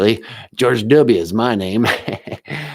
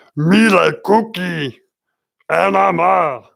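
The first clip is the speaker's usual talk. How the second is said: rasped out, rough and pitched up; 8 semitones higher, 3 dB louder than usual. Showing an impression of Cookie Monster. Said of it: "same actor as Cookie Monster".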